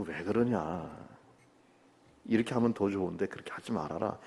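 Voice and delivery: gentle, soft, coaxing tone. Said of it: "이게 타이르는 거라고요".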